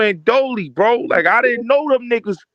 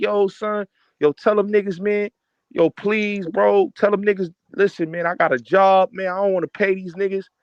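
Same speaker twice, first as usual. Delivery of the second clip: put-on earnest, hard begging plea; 4 dB quieter than usual. Retelling how someone begged to be spared from paying: imitating someone begging. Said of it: "son begged me".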